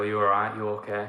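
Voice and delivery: ordinary talk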